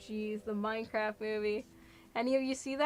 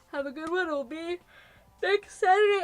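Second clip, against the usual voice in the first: talking through a yawn, higher and louder; 5 semitones higher, 7 dB louder than usual. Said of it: "I'm yawning all over the place".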